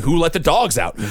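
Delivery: ordinary delivery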